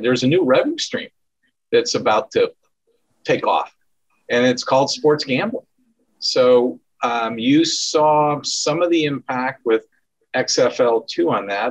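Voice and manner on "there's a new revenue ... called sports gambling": normal talking voice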